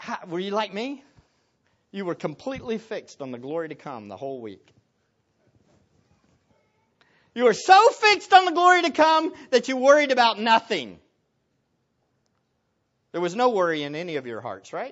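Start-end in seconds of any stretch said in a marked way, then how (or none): 1.9-14.9 heavy, obvious, loud, swooping sarcasm. Speaker asking listeners how their week went; sarcastic. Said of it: "I'm speaking with sarcasm".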